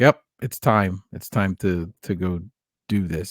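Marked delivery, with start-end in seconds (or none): none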